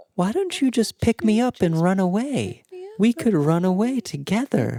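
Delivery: small, high creature voice. Running the game, the speaker voices a creature speaking in a player's mind, in a little voice. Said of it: "you hear a little voice in your mind going".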